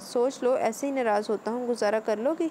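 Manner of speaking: ordinary delivery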